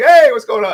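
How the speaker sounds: bubbly, acted-out excitement, very high and loud. Imitating how an acquaintance always greets people: imitating Paco's excited greeting. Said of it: "He's always excited".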